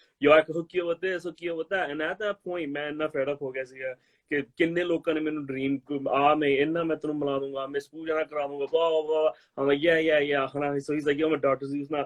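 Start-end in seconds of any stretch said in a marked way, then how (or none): 11.2-12.1 mock nonchalant, offhand, casual delivery. Retelling what a man said about knowing someone, imitating a nonchalant tone. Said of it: "he said it so nonchalant".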